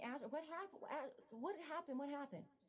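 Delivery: high, frantic, hysterical, broken-off, play-acted screams. Retelling a frantic phone call, hysterical: retelling her own screaming. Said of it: "I'm screaming".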